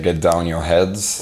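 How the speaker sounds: usual speaking voice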